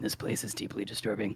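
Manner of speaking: very hushed, low, quiet under-breath muttering. Tizkar steps behind Hale to put him between himself and the creature, muttering.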